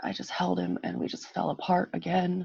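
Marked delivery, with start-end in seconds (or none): none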